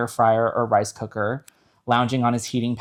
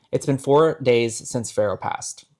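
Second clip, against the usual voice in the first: ordinary talk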